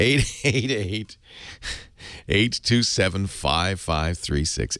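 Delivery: slow, deliberate, each unit carefully spaced out. Repeating the digits after saying them too fast, slower. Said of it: "I'll say it slower".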